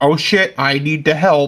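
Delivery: slow, dawning, panicked tone. Voicing a character who is in a state of panic: panicking. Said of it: "Chain right now is in a state of just like".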